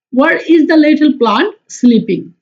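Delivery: very slow, careful, word-by-word reading aloud.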